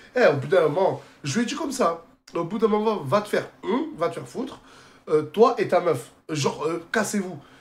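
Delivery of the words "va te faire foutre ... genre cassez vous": plain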